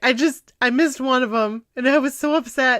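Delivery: ordinary talk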